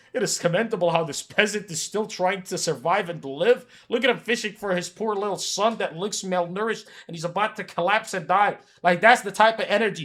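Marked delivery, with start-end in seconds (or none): none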